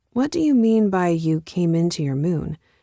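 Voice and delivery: ordinary talk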